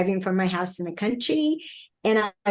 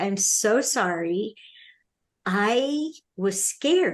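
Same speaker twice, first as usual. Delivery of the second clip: acted-out crying, slow, tearful, drawn-out "sorry". Retelling an apology made while crying: retelling a tearful apology. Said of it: "as I'm crying".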